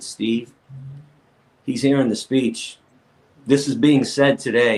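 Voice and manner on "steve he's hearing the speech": usual speaking voice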